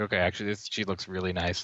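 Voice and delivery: ordinary talk, nothing marked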